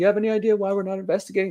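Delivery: very high, taunting, mocking put-down tone. Retelling a supervisor brushing off the investigator: imitating a mocking tone. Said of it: "Just totally mocking him".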